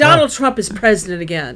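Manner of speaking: gleefully upset, thrilled yet dismayed delivery. Retelling how the mother greeted the speaker coming home: imitating mom gleefully upset. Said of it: "gleefully upset".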